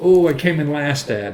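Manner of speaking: usual speaking voice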